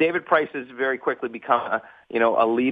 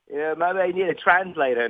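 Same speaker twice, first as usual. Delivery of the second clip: clumsy, off-target put-on Australian accent; 4 semitones higher than usual. Retelling what an interviewed dad said to you after the interview, use a bad australian accent. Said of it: "that's a bad Australian accent".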